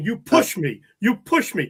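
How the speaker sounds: put-on accusing cry, screaming. Retelling an official who tripped leaving the ice: imitating someone screaming. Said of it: "he's screaming".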